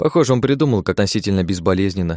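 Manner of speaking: ordinary delivery, nothing marked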